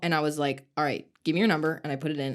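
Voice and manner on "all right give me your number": put-on snippy, curt, dismissive, bitchy tone. Retelling how they asked a guy at the gym for his number: imitating own bitchy tone. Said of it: "so I was really bitchy".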